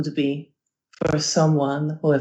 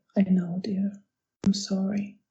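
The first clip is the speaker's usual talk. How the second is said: hushed, very quiet, soft voice; 4 semitones higher, 5 dB quieter than usual. Voicing a character comforting a friend who was not believed: very quietly. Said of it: "She says very quietly".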